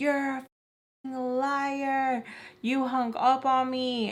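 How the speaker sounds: high, very slow, angry voice, liar drawn out. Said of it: "What are you even yelling at me about?".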